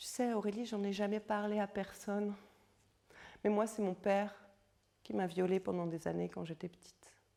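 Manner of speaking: tiny, hushed, barely breathed half-whisper. A speaker retells a woman confiding in her, imitating a small half-whispered voice. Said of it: "elle me susurre d'une petite voix".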